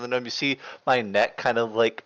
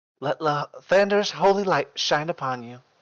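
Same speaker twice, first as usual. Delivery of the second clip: high put-on female voice; 5 semitones higher than usual. Recounting a scene, one character speaks to another before he leaves, female character voice. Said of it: "In the same female voice from before".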